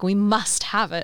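ordinary talk

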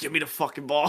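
monstrous, demon-like voice. Recounting an anime scene where a monster voice is heard: demonic voice. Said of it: "You just heard like a demonic voice".

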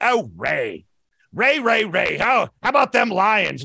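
very slow, dragged-out drawl, one word stretched. Predicting what a friend named Kevin will say, doing a Kevin voice impression. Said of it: "just because I want to keep doing the Kevin voice".

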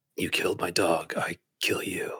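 slow, tough-guy style voice. Doing an impression of Keanu Reeves for friends: Keanu Reeves voice. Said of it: "you sound like him".

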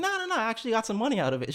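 high, fast, chirpy, rattled-off reassuring tone.

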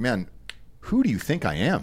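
ordinary delivery

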